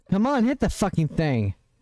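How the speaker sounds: frustrated, getting angry. Playing a game and urging an attack to land: getting angry. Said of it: "I'm getting angry".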